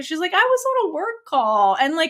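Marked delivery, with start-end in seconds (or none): 0.3-1.8 high, cute, sweet, drawn-out whine. Retelling how one partner whined about a work call: imitating a nice whine. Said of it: "she very nicely whines to Little Nung".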